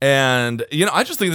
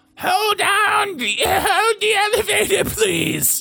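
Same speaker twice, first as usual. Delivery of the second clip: put-on old woman voice, pitched much higher. Speaker retelling a voice heard before the elevator door closed, old woman voice. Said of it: "I heard an old woman's voice".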